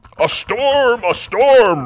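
very slow, high, loud, drawn-out announcing shout. Reading a story aloud, the goblin Red at the cave mouth; shouted. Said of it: "Red shouted".

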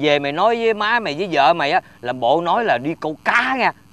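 soft, quick, hushed voice.

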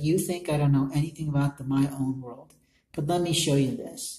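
ordinary talk, nothing marked

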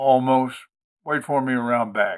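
ordinary delivery

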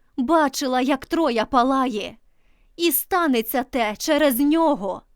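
tearful, emphatic, insistent outcry. Cassandra answers her doubting sisters, exclaiming emphatically through tears. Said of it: "з притиском вигукнула Касандра крізь сльози".

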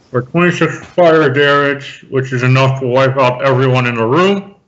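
muffled, blurred words as if mouth obstructed. Rolling damage for a fireball, said with a pen in mouth. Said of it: "I said that with a pen in my mouth".

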